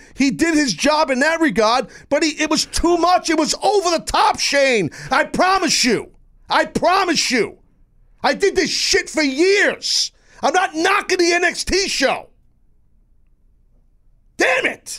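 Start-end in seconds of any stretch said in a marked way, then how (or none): 6.5-15.0 angry, heated yelling. Arguing that an NXT segment went over the top, yelling in anger. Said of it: "And now I'm yelling".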